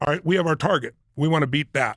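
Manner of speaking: ordinary talk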